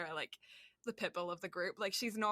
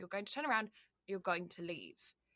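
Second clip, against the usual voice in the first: stern, commanding, firm put-on English accent. Retelling what was said to people shaking in their boots, put-on English accent. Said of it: "the English accent works for something then".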